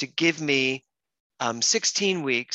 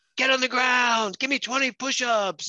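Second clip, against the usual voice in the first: shrill, very high, barked, screamed trainer-style voice; 10 semitones higher than usual. Retelling a trainer in a park ordering people around; imitating a screaming trainer. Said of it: "he's like screaming at them".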